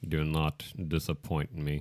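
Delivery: low, slow, deliberate, drawn-out drawl. Imagining an actor hearing Alan Rickman before each take: Alan Rickman voice. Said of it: "got Alan Rickman in, in, in his head saying".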